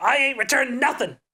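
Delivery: high put-on cartoon old-man voice. Retelling the cartoon scene, imitating Eustace. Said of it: "Eustace being like".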